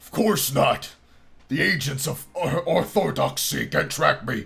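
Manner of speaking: terrible, slow, rough, creaky growl, drawn out. Reading a story aloud, voicing a masked stranger: terrible Batman voice imitation. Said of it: "starting to sound more like Hulk Hogan than Batman".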